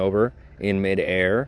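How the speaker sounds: ordinary talk, nothing marked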